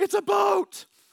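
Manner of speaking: thrilled shout, very loud and high-pitched. Acting out a guy on an island spotting a boat: yelling excitedly. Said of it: "He's yelling".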